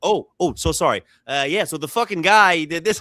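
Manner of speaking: choppy, halting, non-native broken English. Retelling a tennis player's interview reply: imitating broken english. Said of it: "in broken English".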